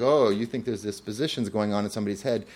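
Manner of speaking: ordinary talk, nothing marked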